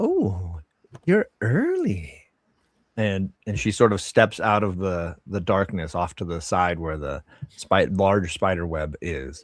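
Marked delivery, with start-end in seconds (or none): 0.0-2.2 giggling, giggly, very high, sing-song, swooping voice. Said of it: "you hear a little giggle sound".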